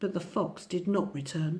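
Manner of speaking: usual speaking voice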